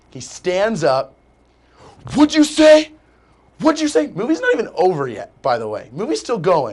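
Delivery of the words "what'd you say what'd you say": acted, very high, shrill, furious angry screaming. Retelling an angry man standing up: imitating an angry man. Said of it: "He gets so angry".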